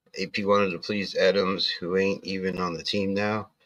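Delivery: ordinary delivery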